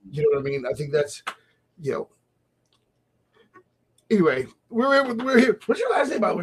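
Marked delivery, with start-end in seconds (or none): 4.1-5.6 high-pitched, loud radio announcer voice. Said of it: "Did you hear my radio voice kick in?".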